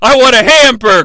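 demanding high shout. Describing a game character's combo move, imitating him yelling. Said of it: "he strikes you with and yells".

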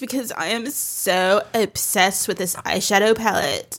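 fried, creaky vocal-fry influencer delivery. Speakers joking about vocal fry; one demonstrates it: creaky voice. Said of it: "I'm going to use my creaky voice".

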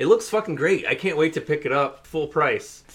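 fake gushing enthusiasm. Answering whether they saw the game's review, fake sarcastic praise. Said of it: "All sarcasm aside".

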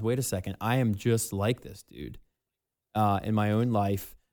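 ordinary delivery

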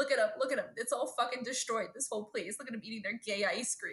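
ordinary talk

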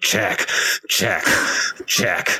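words squeezed out through a clenched jaw. Acting out a chess player repeatedly calling check, retelling it through gritted teeth. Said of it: "with gritted teeth going".

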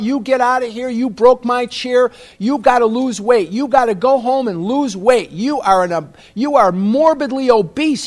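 loud, high-pitched yelling. Retelling how a dentist yelled in your face about your weight, imitating a yell. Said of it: "he's screaming at his daughter".

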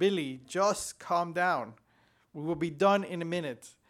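ordinary talk, nothing marked

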